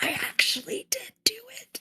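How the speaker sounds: hushed, secretive whisper. In character, secretly confessing to another character: whisper. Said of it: "I whispered to him and I say".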